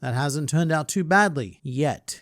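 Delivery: emphasis on "yet", set apart after a pause. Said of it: "I'll say the same thing for him".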